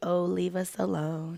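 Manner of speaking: gloomy put-on donkey voice. Retelling how the name's pronunciation is explained: Eeyore voice. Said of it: "every time I say that, it, it sounds like, um, Eeyore".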